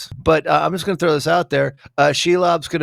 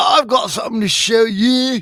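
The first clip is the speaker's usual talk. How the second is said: bad put-on Scottish accent, high, slow, drawn-out; 8 semitones higher, 3 dB louder than usual. Attempting a Scottish accent after being asked how to do it: bad Durin Scottish accent.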